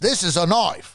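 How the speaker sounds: put-on Australian accent. Quoting a line while discussing an Australian film, in an Australian accent. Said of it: "Now we can get back to the accents".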